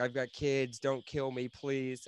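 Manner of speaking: put-on pleading tone. Retelling a beaten cop's words to his attackers: imitating someone pleading. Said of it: "I just started pleading to their humanity".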